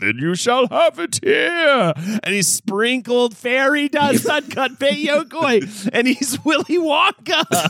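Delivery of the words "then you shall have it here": grand, swooping storybook wizard voice. Asked to do the wizard voice while telling a story: wizard voice. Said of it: "do the wizard voice".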